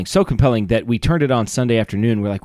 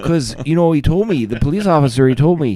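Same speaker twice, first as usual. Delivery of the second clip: put-on Wisconsin country accent, higher; 4 semitones higher than usual. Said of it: "I'm not as good as I was".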